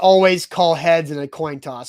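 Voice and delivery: ordinary delivery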